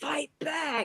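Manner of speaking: play-acted, very high, loud yell. Retelling shouting at a fight while booing as an extra: retelling a loud shout. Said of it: "really loud".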